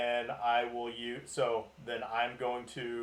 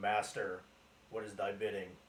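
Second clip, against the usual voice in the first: quiet under-the-breath mutter, lower and quieter; 3 semitones lower, 4 dB quieter than usual. Calling out in character to a master through a rod: under one's breath. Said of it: "So under my breath".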